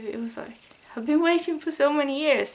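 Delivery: tearful, weepy speech, crying while talking. Recalling finally seeing a band live, crying while talking. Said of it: "I'm starting crying again".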